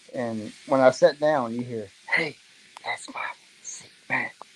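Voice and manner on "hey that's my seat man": rough, growly, hushed whisper. Retelling a strange voice heard on sitting down, in a growly, whispery voice. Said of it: "in just that growly, whispery voice".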